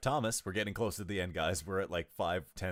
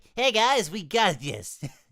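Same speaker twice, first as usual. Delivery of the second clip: very nasal, high, loud voice; 12 semitones higher, 9 dB louder than usual. Voice actor showing how he voices Veemon, very nasal. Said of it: "go like real nasally".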